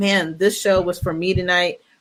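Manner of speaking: plain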